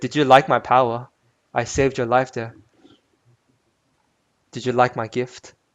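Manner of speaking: condescending, patronizing, talking-down tone. Narrating a role-play scene, an unseen voice addresses the lone player, condescending voice. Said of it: "It's like it's like a very condescending voice".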